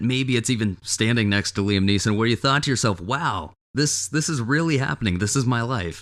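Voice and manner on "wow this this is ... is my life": ordinary talk, nothing marked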